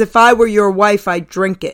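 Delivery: put-on deadpan, dead-serious tone. Retelling a heckling wife's comeback to a comedian: imitating a dead-serious reply. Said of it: "as serious as could be".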